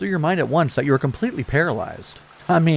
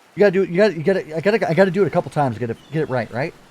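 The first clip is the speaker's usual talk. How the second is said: usual speaking voice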